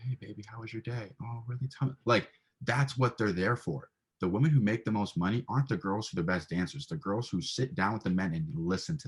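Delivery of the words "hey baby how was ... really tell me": put-on, very feminine, nice, attentive voice. Acting out a very feminine woman asking about a man's day: put-on feminine voice. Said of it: "a very feminine woman".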